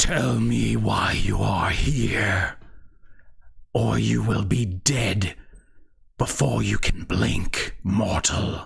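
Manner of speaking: raspy, creaky voice with a hollow armored sound. Game master voicing a knight confronting the players, in a raspy voice. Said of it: "his raspy voice um, sort of seeps out of his helmet".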